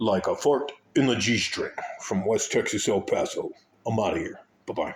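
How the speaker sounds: deep radio announcer voice, on-air delivery. Signing off at the end, radio voice. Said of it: "I'm going radio voice".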